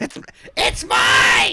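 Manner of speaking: high, slow shout with laughter.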